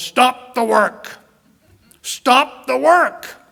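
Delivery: very loud, slow, drawn-out, high, booming shout. Recalling a man who didn't mind embarrassing you, retelling a loud command. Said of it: "He would just say in a loud voice".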